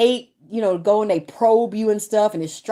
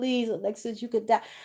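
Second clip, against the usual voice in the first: quieter, imitated pleading put-on voice; 9 dB quieter than usual. Retelling a doctor friend's warning: imitating a friend pleading. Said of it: "pleading with me".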